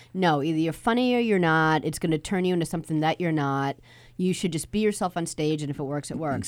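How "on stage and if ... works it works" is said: ordinary talk, nothing marked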